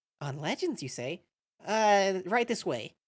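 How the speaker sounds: little lizard lady voice. Voicing the librarian answering the king: Alphys voice. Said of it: "little lizard lady comes out".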